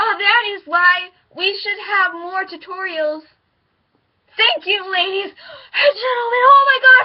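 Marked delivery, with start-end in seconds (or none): 0.2-6.4 mock panting while speaking, higher and louder. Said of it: "give me some water".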